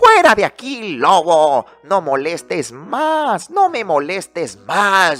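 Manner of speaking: high, rude, shouted little pig voice. The wolf telling his story, voicing the pig who answered him, rude little pig shouting. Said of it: "¿Y saben lo que contestó ese puerquito grosero? / Este vecino era el hermano del primer cerdito. / Y me contestó gritando".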